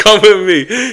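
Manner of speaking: loud, high, barking drill-sergeant scream. Retelling a man like a drill sergeant who stopped at him, imitating someone screaming. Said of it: "he starts screaming".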